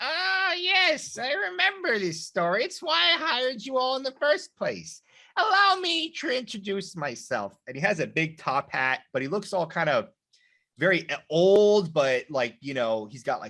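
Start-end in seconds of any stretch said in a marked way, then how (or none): 0.0-7.5 squeaky, very high, tiny gnome voice. Voicing a little gnome who drops onto the table and introduces himself: little gnome character voice. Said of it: "this little gnome, boop, falls on the table and he goes".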